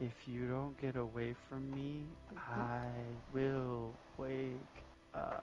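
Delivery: small, very hushed, tiny drawn-out voice. A game master voices a seemingly dead man as the players lean in: small voice. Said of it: "you hear a small voice say".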